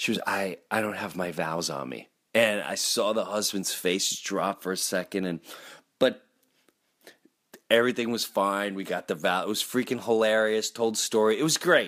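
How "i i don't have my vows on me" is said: soft, hushed half-whisper under the breath. Retelling a moment during the vows: imitating someone half-whispering. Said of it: "she's whispering".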